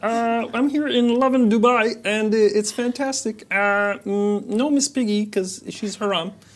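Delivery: loud cartoon frog puppet character voice. Performing an old stand-up bit when asked: Kermit the Frog voice.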